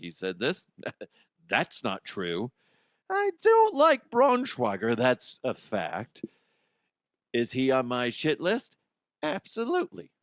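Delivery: brisk sing-song woman's voice, swooping pitch, put-on offended. Imitating his wife making a list: imitating his wife. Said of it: "I can envision her now making a list".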